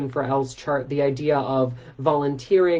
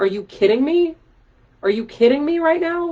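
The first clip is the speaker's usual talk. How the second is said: plain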